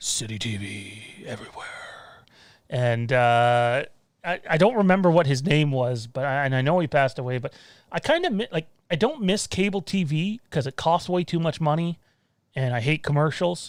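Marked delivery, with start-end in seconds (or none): 0.0-1.7 deep, breathy, hushed, slow whispered announcer voice. Recalling City TV for Canadians in the chat, imitate its deep voice guy. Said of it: "the deep voice guy would be like".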